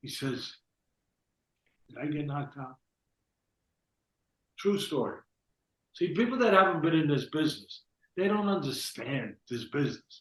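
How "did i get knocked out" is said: soft, hushed half-whisper under the breath. Recounting what a man half-whispered to him after the fight: retelling a half-whisper. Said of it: "he whispers to me".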